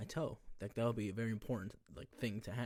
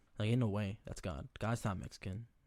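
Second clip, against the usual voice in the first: ordinary talk, nothing marked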